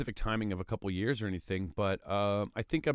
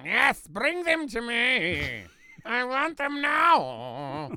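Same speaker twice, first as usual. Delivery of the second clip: very high evil drawl, "me" stretched out; 12 semitones higher than usual. Imitating a cartoon bad guy: evil Paul Lynde voice. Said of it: "Sort of an evil Paul Lynde thing".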